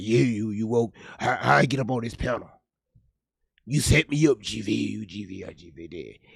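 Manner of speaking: mock deep, just-woken voice. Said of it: "Her voice deep as hell when she woke up".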